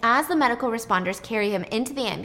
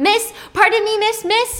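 very high, loud, urgent yelling; 11 semitones higher, 7 dB louder than usual. Retelling a man chasing a waiter out the back door: imitating screaming after someone. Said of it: "He's screaming at her as he's chasing".

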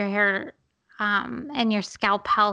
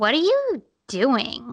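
acted judgmental, disapproving tone, swooping pitch; 2 semitones higher, 4 dB louder than usual. Telling a story, the speaker quotes Frances's reaction, imitating her judgmental tone. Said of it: "with the most judgmental face and the most judgmental tone".

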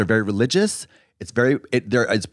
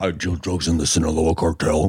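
put-on voice changer sound, distorted, lower pitch; 7 semitones lower than usual. Picturing an anonymous informant in a Vice documentary: imitating a voice changer. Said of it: "From the Vice documentaries".

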